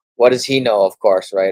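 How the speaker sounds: loud, mock tone dripping with sarcasm. Reading a news quote about an investment strategist, then commenting: sarcastic tone. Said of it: "I'm being sarcastic".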